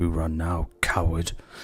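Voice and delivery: quiet muttering under breath. Playing a character who mocks a fleeing coward: muttered under breath. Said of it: "I'm just gonna mutter under my breath".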